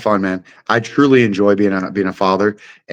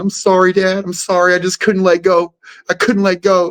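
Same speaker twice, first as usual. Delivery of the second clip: put-on very high-pitched, apologetic little-kid voice; 10 semitones higher than usual. Retelling how a son apologized after a choke: imitating an apologetic kid. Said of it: "he was all apologizing".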